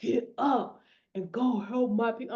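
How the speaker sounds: low, deep, slow, deliberate voice. Retelling the loud voice that woke them: imitating a deep loud voice. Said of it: "I'm not saying the voice right, y'all, but it was deep".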